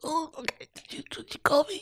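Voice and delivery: play-acted, choked-up, breathy near whisper. Retelling a scene where a character is moved: imitating someone choked up. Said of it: "choked up".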